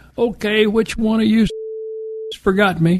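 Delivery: loud, high, announcer-like carrying voice. Retelling how a woman announced to the group, in a loud voice. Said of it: "she announced in a loud voice".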